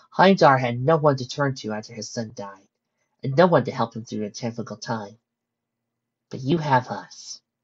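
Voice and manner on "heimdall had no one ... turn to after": plain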